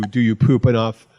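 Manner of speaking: ordinary delivery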